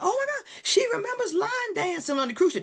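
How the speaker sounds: high, excited yell. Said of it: "The niece yells out".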